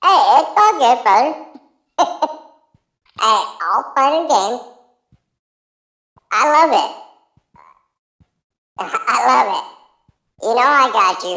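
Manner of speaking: high squeaky put-on chipmunk voice. Calling in to another speaker's channel: chipmunk-sounding voice. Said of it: "you do got me sounding like a fucking chipmunk".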